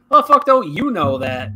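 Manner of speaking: loud, as-if-obvious tone. Retelling how a friend replied to someone: imitating Clint. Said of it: "he's like".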